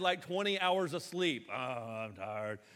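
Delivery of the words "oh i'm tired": acted weary, worn-out, very low, soft voice. Imitating a friend who always answers a greeting: Nick impression, tired. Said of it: "Nick's just always tired".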